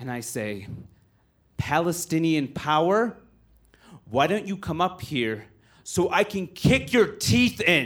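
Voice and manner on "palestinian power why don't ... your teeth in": put-on furious, harsh, angry delivery. Retelling a reply to a heckler who interrupted the show: retelling an angry, harsh threat. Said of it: "the angriest and the harshest thing".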